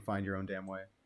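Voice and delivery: ordinary talk, nothing marked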